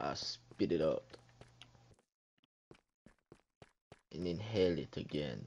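very quiet, hushed put-on Russian accent. Mid-banter with another speaker, say it in a Russian accent. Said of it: "Is that your Russian accent?".

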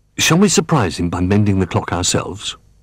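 ordinary delivery

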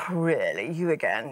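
put-on very low, weary, tired British accent. Recalling a childhood concept of God, the speaker voices him with a British accent. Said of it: "of course he had a British accent".

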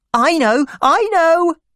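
very high, loud, eager excited outburst. Narrator reads the little sister answering the doctor who doesn't know, excited. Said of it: "said my little sister excitedly".

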